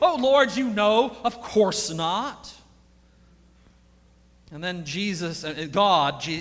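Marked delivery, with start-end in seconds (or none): 0.0-2.5 exaggerated sarcastic tone. Retelling the reply to God's question about the bones: acting out a sarcastic reply. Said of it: "his response is sarcastic".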